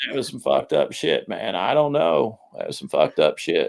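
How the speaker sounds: low, quiet, creaky, raspy murmur. Reacting to a woman's rambling answer, Matthew McConaughey voice. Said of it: "use my Matthew McConaughey voice here".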